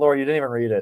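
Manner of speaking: put-on passive-aggressive tone. Retelling an officer's reply: imitating passive-aggressive officer. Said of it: "that was my favorite passive aggressive".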